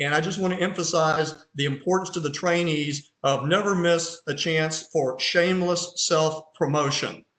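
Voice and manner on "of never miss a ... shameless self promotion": normal talking voice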